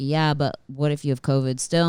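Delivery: ordinary talk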